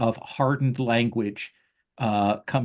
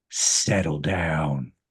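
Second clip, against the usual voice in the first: deep, low voice carrying across a whole floor; 6 semitones lower than usual. Narrating a voice that carries through the noisy floor, booming voice. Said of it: "you will hear a booming voice on this floor that you're on say".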